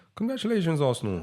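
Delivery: voice suddenly, involuntarily jumps high-pitched. Talking about Arsenal and congratulating them, the voice goes high-pitched. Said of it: "I don't know why my voice went high pitched there".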